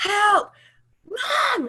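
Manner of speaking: mock very high, panicked, frantic screaming. Retelling how a daughter screams from the patio: imitating a child screaming for help. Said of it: "she starts screaming at the top of her lungs".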